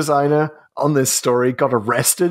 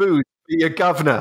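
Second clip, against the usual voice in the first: put-on working-class accent. Mimicking a character who thinks he can pull it off, fake working-class accent. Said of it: "puts on a working class accent".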